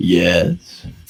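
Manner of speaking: very low, deepest possible, bottom-of-the-range voice. Retelling a reply said from the choir: imitating the deepest possible voice. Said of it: "It is the deepest voice you could possibly do".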